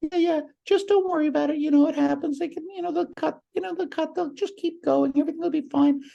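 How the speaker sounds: very high, squeaky voice. Retelling how a thirteen-year-old calmed the speaker down, in a high, squeaky voice. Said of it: "he had that high, squeaky voice".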